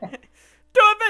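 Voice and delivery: very loud, very high, shrill booming bellow. Acting out a cigar-smoking producer yelling on set: imitating a producer yelling. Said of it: "yelling in the background".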